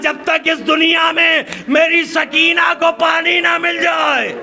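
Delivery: impassioned cry.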